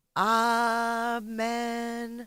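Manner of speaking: gentle, somber tone. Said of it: "gently say".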